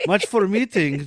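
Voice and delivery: mock Russian gangster accent.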